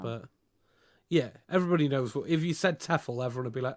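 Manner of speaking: ordinary talk, nothing marked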